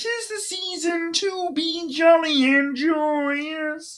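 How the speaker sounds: very high, drawn-out, joyous. Talking about favorite Christmas movies, doing a Kermit the Frog impersonation. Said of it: "that's my Kermit the Frog impersonation".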